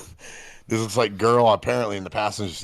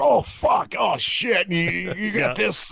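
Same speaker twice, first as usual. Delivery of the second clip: put-on panicked voice, pitched higher; 12 semitones higher, 3 dB louder than usual. Acting out own reaction as a passenger in a skidding car: pretending to freak out. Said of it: "I'd be freaking out".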